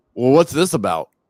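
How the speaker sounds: real gruff, loud voice. Retelling a rude man who came up to the speaker's booth; imitating a gruff guy. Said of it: "Just real gruff".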